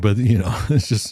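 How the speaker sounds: speaking through laughter. Apologizing for laughing after describing a story: laughing while talking. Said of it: "I'm sorry I'm laughing".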